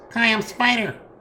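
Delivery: squeaky, very high, sad, unhappy spider voice. A spider missing a foreleg introduces itself, high-pitched unhappy spider voice. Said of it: "It speaks with a normal spider high-pitched voice".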